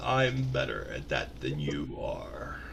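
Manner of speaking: very deep, throaty, slow guttural monster rumble. Voicing the alien-looking thing as it opens its mouth and speaks, deep guttural voice. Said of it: "it has this deep guttural voice that says".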